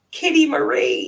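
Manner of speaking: put-on very high-pitched, loud, tearful child's crying. Retelling blurting out a doll's name as a child at the fire, imitating crying. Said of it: "And I'm like crying because".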